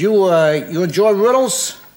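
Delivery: put-on Brooklyn cab driver accent. Telling a riddle joke, voicing a cab driver to an Englishman, Brooklyn accent. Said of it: "I don't do a good English accent".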